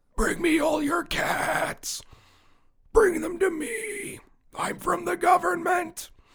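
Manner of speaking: very high, straining, strained voice. Discussing a show, a speaker previews a government-agent voice: straining put-on voice. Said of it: "That's a preview of the voice I'm not going to do on the show ever again".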